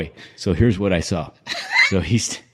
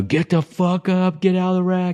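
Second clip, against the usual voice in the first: mock very high, shrill drill sergeant scream; 11 semitones higher than usual. Recounting a sergeant instructor waking recruits at three thirty: retelling his screaming.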